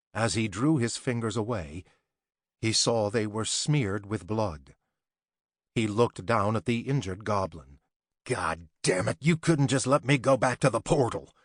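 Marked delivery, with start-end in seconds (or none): 8.3-11.2 angry, growled delivery. Reading a story, the wounded warrior turns on the injured goblin, growled. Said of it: "The Racestrike CEO had decided to transfer as a human warrior, / [name] Harris stepped through the portal that led to the beginning of the Earth realm. / The Racestrike CEO had decided to transfer as".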